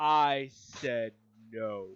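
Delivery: voice dropped super deep and booming. Repeating the guard's refusal: imitating a deep booming voice. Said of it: "his voice got super deep".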